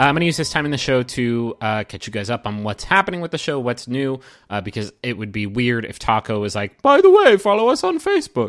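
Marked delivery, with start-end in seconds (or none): 6.8-8.5 very high, shrill, loud character voice. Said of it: "That's my Taco impression".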